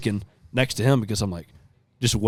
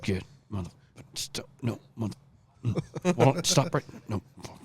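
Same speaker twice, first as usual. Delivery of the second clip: put-on muttering under the breath, quieter; 8 dB quieter than usual. Retelling a hunt, imitating Tanner muttering under his breath while following a deer. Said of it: "the whole time he's sitting there under his breath".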